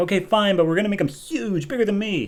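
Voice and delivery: put-on high, excited, eager little boy voice.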